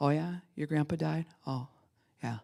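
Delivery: level, flat, monotone drone with no inflection. Showing how someone really depressed talks: flat, level voice, no inflection. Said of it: "your voice doesn't really have a lot of inflection".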